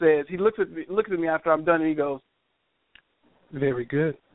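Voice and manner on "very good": soft, quiet, meek and humble voice. Retelling an audition, quoting the executive producer: imitating John Ridley, quiet and meek. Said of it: "it's very quiet and meek and humble".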